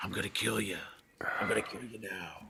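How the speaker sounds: hushed, very quiet, menacing whisper. Saying Seagal would take someone down, the speaker imitates him: whispering like Seagal. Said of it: "And he would whisper to you".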